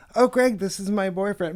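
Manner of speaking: ordinary talk, nothing marked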